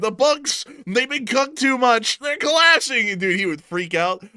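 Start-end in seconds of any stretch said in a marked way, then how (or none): 0.0-3.1 raised, high, loud shouted yell. Joking about an accountant bursting into the room: imitating someone yelling. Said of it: "an accountant came into the room yelling".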